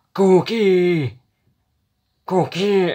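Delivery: clumsy high-pitched yell. Answering a would-you-rather question by attempting a Cookie Monster voice. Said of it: "I can't do it".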